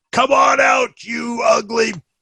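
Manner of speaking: taunting, yelled delivery. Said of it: "and I yell".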